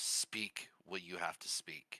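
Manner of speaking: whispered, hushed, authoritative and commanding. Voicing a character who orders a fortune teller: commanding voice. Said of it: "in a commanding voice".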